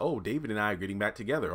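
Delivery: plain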